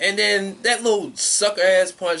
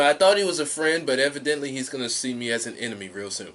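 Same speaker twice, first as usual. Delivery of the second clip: normal talking voice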